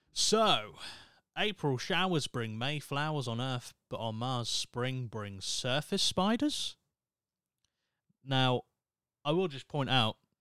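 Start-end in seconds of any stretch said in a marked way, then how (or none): 4.5-6.8 pitch rises at the end on spiders. A statement with no question mark: rising like a question on spiders. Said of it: "I just put an inflection at the end of it to make it sound like it was in question".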